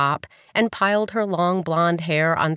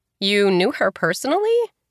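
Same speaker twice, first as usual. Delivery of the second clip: surprised, astonished; 3 semitones higher than usual. A woman asks a man whether he knew her aunt, in surprise. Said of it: "she asked in surprise".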